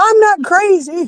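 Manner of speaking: pretend, acted screaming.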